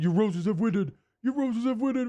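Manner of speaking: put-on high-pitched shout in a very strong Cajun accent. Retelling a grandfather yelling at rival fans: imitating grandfather yelling, Cajun accent. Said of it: "with his very Cajun accent".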